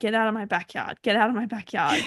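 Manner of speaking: ordinary talk, nothing marked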